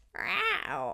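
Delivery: high, sassy cat voice, meowing. Demonstrating a vocal sound by pretending to be a sassy cat. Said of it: "pretending to be a sassy cat".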